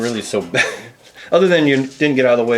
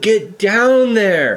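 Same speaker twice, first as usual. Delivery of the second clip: high, barked, yelled voice; 9 semitones higher than usual. Voicing a game lieutenant who runs up to a wall: yelling an order. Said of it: "He ran up to that wall and he yelled".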